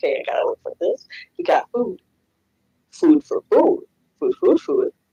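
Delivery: muttering quietly under the breath. Describing a character on a mission, acting out them talking to themselves. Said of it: "just like talking to themselves".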